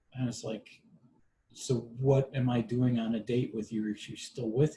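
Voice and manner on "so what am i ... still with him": plain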